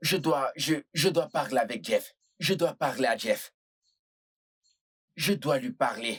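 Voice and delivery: agitated, pressing, worked-up insistence. Insisting that they must talk to Jeff: agitated, needing to calm down. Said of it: "Détends-toi".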